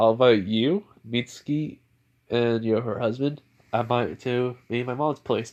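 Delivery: ordinary delivery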